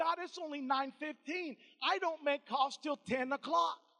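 ordinary talk

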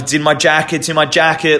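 flustered, frantic, panicked, alarmed voice. Retelling being asked for a passport while hurt, retelling a panicked answer. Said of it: "Like I'm panicking".

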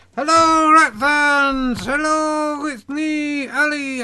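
put-on acting a little drunk. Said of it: "I'm a little drunk".

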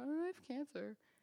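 mumbled, barely articulated. Retelling telling a boyfriend about the cancer: imitating own mumble. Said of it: "I mumble out".

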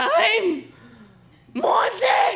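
play-acted shrill, very high-pitched scream. Retelling how an aunt and grandma came out screaming; retelling a scream. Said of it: "come out screaming like".

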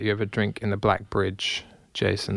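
ordinary delivery

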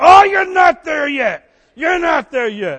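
put-on booming call-out. Recalling a man in church calling back while he preached, imitating a booming call-out. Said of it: "boom, back at me".

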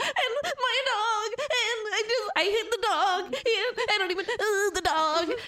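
mock cartoony sobbing, very high-pitched and drawn out. Mocking a cartoony audition scene, imitating Allison crying at the vet. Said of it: "she's crying, she's like".

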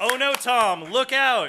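mock alarm, high and loud.

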